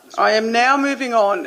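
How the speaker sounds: plain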